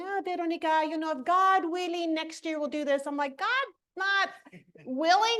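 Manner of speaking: put-on Italian accent. Quoting her italian mother, doing the mother's accent: italian accent. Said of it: "so I'll do the Italian accent".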